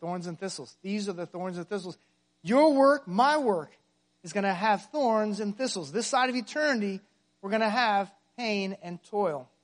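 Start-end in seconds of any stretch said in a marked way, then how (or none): 0.0-2.0 soft, low murmur under the breath. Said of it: "That's what I whisper to myself".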